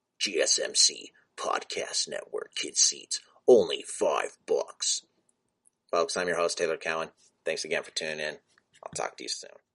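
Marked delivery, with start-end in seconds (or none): 0.2-5.0 very slow, drawn-out ad announcer voice. Podcast host plugs his podcast network, monster truck commercial voice. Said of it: "my monster truck commercial voice".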